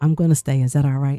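mock whispering. Retelling asking to stay at the house: retelling a whisper. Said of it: "And I whispered".

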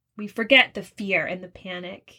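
ordinary delivery

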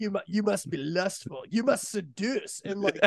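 imitation French accent. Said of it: "no more French accent for me".

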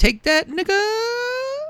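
very high, drawn-out final A of the n-word. Retelling how Orton said a line: imitating Orton, long A ending. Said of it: "with a long A".

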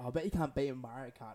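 ordinary talk

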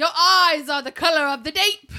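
put-on hammy, cheesy Australian accent, pitched high. Imitating the reenactor who reads emails on a show, show reenactor's accent. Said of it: "I cannot take this voice serious".

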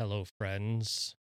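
sexy, seductive, come-hither tone. A podcast co-host greets the listeners in a sexy voice. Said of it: "That's my sexy voice".

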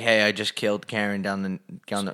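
low, soft, casual hitman voice.

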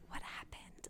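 barely voiced, hushed, baffled, confused whisper. Retelling a character's confused line after a fast conversation: imitating a whisper.

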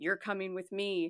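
super deep demonic voice. Retelling a dream where a woman grabbed the speaker: super deep demonic voice. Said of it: "said in a super deep demonic voice".

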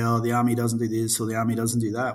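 ordinary talk, nothing marked

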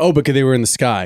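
ordinary talk

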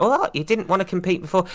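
plain

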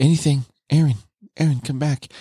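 put-on quiet whisper. Retelling a scene where Mikasa calls Eren back: imitating Mikasa whispering. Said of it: "Mikasa whispers quietly".

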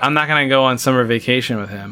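ordinary delivery

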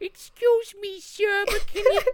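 put-on awful old man voice, high-pitched, drawn-out, slow. Imitating the awful old person voice from Eight Crazy Nights: Whitey voice. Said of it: "Adam Sandler doing an awful old person impersonation".

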